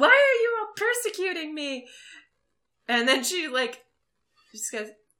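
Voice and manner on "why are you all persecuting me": very high, shrill, loud accusing yell. Retelling a woman's scene after she tossed everyone out, imitating someone yelling.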